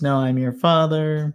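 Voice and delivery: ordinary talk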